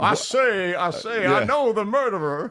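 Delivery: very slow, stretched-out cartoon voice, every word dragged. Defending the film's accent to another speaker: Foghorn Leghorn voice. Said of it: "everybody loves Foghorn Leghorn".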